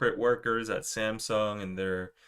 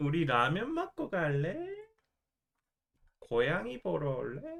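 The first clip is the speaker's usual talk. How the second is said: put-on cutesy aegyo baby talk, high and sing-song; 7 semitones higher than usual. Speaker performs Korean aegyo lines, cute baby-voice aegyo. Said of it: "baby voices and high-pitched voice Egyo".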